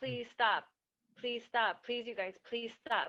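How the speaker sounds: mock nice, sweet, gentle, polite pleading. Retelling how she begged the photographers to leave: imitating a nice, polite plea. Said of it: "that's how nice she was".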